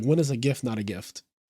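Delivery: unhurried, quietly composed, calm soft voice. Retelling a film scene where the Baron answers another character, imitating the Baron speaking calmly. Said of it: "very calmly".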